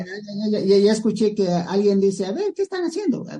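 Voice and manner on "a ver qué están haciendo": put-on very high-pitched female voice. Retelling what someone was heard saying: imitating a woman's voice. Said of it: "Voz de mu-, mujer".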